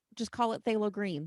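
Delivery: ordinary talk, nothing marked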